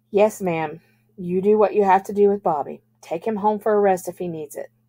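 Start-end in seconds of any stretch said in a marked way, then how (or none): none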